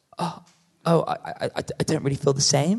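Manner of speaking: put-on flustered gasp with startled stammer. Retelling a date reading a card, imitating a flustered gasp.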